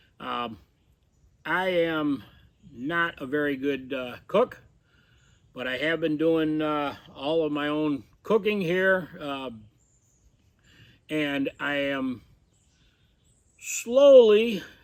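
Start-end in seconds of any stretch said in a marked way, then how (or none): 13.6-14.6 "slowly" strongly stressed, leaned on hard. Speaker describes doing their own cooking at camp, stress on slowly. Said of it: "and I emphasize the word slowly".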